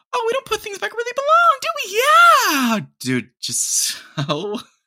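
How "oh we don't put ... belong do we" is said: shrill, very high-pitched voice. Recalling how his mom scolded him, imitating mom's high-pitched tone. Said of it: "she'd always speak in a high-pitched tone at that point".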